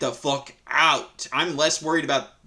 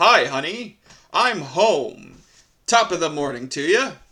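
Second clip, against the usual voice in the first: put-on obnoxious, smug man's voice; 4 dB louder than usual. Complaining about a husband who never changed a diaper, doing a douchebag husband impression. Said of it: "my fucking impression is of this douchebag".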